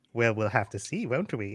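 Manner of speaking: coy, playful, soft, flirtatious teasing tone. Playing a wizard flirting back at the bartender: flirtatious, teasing. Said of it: "And I give him a wink".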